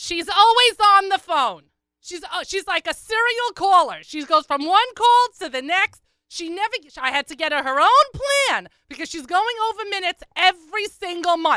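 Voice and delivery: put-on Long Island accent. Imitating a woman going on and on behind him: heavy Long Island accent. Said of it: "incredibly heavy Long Island accent".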